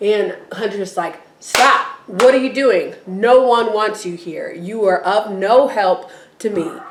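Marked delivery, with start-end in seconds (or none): 1.4-6.7 mock-angry outburst. Retelling someone's reply to a person trying to help, mock-angry outburst. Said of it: "Hunter's just mad".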